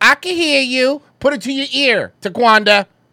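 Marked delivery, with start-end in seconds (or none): 0.0-1.0 put-on loud speakerphone talk, higher. Imitating someone on a speakerphone in public: imitating loud speakerphone talk. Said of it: "talking loudly on a speakerphone in public".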